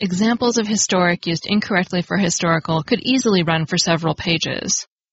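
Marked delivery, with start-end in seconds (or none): none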